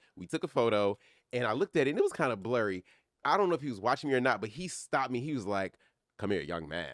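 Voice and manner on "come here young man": voice-of-God delivery. Retelling a photo line moment, imitating Sidney Poitier's voice. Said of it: "you know that voice?".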